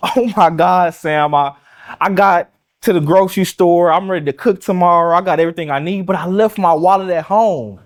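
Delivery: mock crying hysterically through the words, high-pitched. Retelling a woman's phone call to Sam from the grocery store, imitating hysterical crying. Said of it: "hysterically crying".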